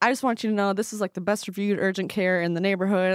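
ordinary delivery

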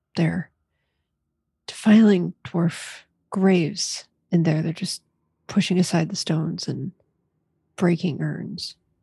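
theatrical whisper. Playing a character warning the party about grave robbers: half-whispering in character. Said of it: "just kind of whisper to the rest of them".

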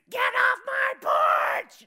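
very high, very loud, horrible ear-splitting demonic screech. Recalling a lady screaming after the speaker's dad knocked on her door, imitating a demonic scream. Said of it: "the most horrible voice screamed out like she was a demon".

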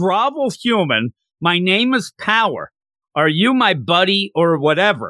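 slow, drawn-out, restrained hollering. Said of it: "starts yelling to Grovel".

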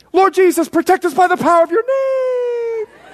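mock high screaming, one word drawn out. Retelling the car going over a cliff, quoting the speaker's wife: imitating someone screaming. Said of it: "My wife screams".

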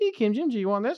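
put-on cutesy, high-pitched, babyish baby-talk voice. Showing how they change up their baby voice each time: baby voice. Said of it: "change up your baby voice every time you do it".

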